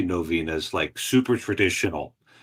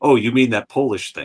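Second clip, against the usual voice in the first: loud, mocking, sarcastic jab; 3 semitones higher, 5 dB louder than usual. Telling a story about their dad, the speaker quotes a priest, retelling a sarcastic remark. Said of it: "this really sarcastic Norwegian priest".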